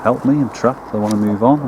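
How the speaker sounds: ordinary talk, nothing marked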